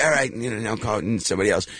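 ordinary delivery

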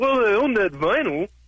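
put-on dim, clueless dumb-guy voice. Radio caller acting out his own reply to a stranger, dumb guy impression. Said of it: "Your dumb guy impression".

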